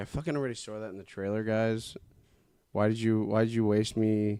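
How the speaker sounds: plain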